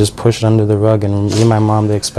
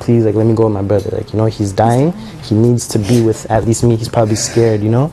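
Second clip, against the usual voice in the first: ordinary delivery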